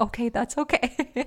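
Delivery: soft stage whisper, under the breath. Retelling how the lady at the hotel front desk half-whispered: imitating someone half-whispering. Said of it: "hunkers down and whispers".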